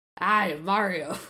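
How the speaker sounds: put-on old-school New York Italian accent. Guessing how Rabbid Mario will talk, the speaker imitates him: Rabbid Mario, old New York Italian. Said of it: "old New York Italian kind of guy".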